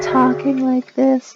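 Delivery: very quiet, barely there talking. Showing how quiet the voice sounds under loud music: talking really quietly. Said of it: "really quietly".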